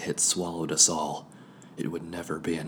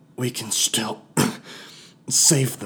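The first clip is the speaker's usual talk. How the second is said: put-on thick, slurred speech, loud and high; 6 semitones higher, 7 dB louder than usual. Narrating a character whose head is fuzzy and lips swelling: slurred speech. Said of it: "I slurred".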